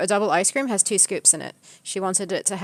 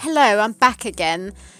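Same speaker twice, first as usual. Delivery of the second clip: put-on self-assured, businesslike, matter-of-fact girl voice, raised; 6 dB louder than usual. Retelling a returning girl's greeting: imitating a confident matter-of-fact girl. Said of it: "very matter-of-fact and, like, uh, quite confident".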